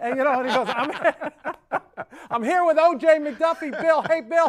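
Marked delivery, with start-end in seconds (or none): 2.3-4.5 loud, high-pitched scream. Telling bill how a man announced he was with o.j. mcduffie, imitating someone screaming. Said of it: "and he's screaming".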